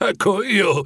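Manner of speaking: high, flustered, embarrassed, stumbling stammer. Scrooge answers the giant ghost's question: embarrassed stammer. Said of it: "farfugliò Scrooge imbarazzato".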